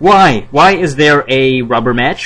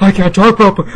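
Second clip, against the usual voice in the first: high, breathless voice with strained, squeezed throat; 5 semitones higher than usual. Imitating a wrestling GM's annoying voice: Johnny Ace impression, breathless strained throat. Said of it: "He sounds like this, sounds like he's running out of breath".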